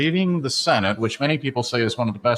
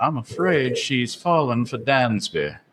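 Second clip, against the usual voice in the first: put-on American Southern accent. Speaker shows what he and his wife say on seeing a player in a game; southern accent. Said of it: "one of us will go into a southern accent".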